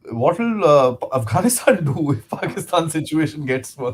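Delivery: words broken up by laughter. Host asks a guest a question on their channel, laughing while talking. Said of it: "I'm sorry, I'm laughing".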